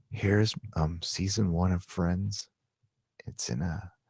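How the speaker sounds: very quiet, hushed, low ASMR whisper. Imitating a girl who unboxes toys and DVDs: imitating an ASMR voice. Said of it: "in A-S-M-R voice".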